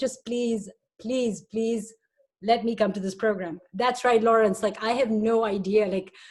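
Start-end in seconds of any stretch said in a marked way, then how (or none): none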